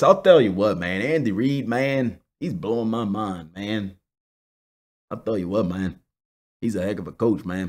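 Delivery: very deep put-on voice, kept soft. Praising a coach, switching into a Jon Gruden voice. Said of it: "in my John Gruden voice".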